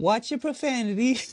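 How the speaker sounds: voice shot way up, very high. Quoting the guy from a meme: imitating the meme guy. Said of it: "the guy who's all like".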